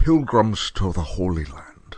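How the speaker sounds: slow film-star voice, each word drawn out. Answering a request to say a phrase: Sean Connery voice. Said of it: "in a Sean Connery voice".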